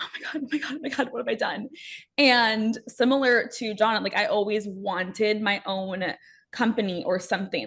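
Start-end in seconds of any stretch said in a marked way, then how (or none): 0.0-1.7 crying, fast, tearful, spiralling panicked freak-out. Retelling the comments tearing them apart: imitating own past crying. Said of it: "crying in my room".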